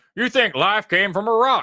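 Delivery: put-on heavy country accent, pitched very high. Speaker attempts his best impression of Hovind; Hovind impression, country accent. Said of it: "He's getting more country".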